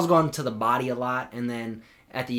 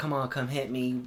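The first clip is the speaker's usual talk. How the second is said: ordinary talk, nothing marked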